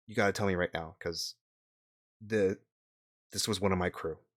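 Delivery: soft, hushed half-whispered aside in character voice. Voicing a crew member named Gideon who leans close to a player: half-whispering in character. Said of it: "he whispers to you".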